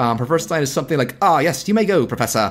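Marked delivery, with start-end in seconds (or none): 1.2-2.5 put-on, heavily British accent. Retelling a movie character's first line: imitating a super British accent. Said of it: "she starts out super British".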